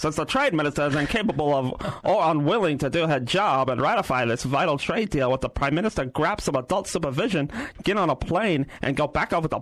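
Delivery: put-on old-timey 1920s-style voice. Reading out a quoted statement in a put-on 1920s-style voice. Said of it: "Should I do the 20s voice?".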